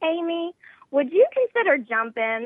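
put-on sweet Southern accent. Speaker jokes about Debbie calling with a request, in Debbie's sweet Southern accent. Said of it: "in her sweet Southern accent".

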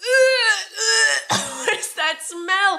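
over-the-top, very high, shrill, very drawn-out, intense. Retelling how everyone reacted to a smell in the tent: imitating an intense reaction. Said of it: "react in, like, such an intense way".

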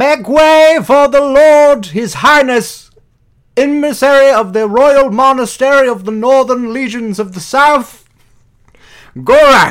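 loud, very high, shrill, booming herald's announcer voice. Backing down the stairs in the game, the player announces a lord, summoning inner Gerald. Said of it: "summon my inner Gerald and say".

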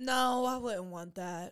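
sounding disappointed, let-down tone. Asked whether they would want that, answering and sounding disappointed. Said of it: "You sound like you're disappointed".

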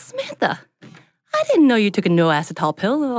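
put-on sweet Southern woman lilt, high and swooping. Retelling a sweet Southern woman's remark: imitating a sweet Southern woman. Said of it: "sweet Southern woman says".

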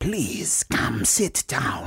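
put-on very slow, whispered witch doctor voice and accent. Voicing a figure who invites the group in: whispery witch doctor voice. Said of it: "It's the whispery thing".

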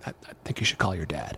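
hushed, breathy, very soft near-whisper. Retelling a father-in-law's advice to call home: imitating Don speaking very softly. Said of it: "he says very soft".

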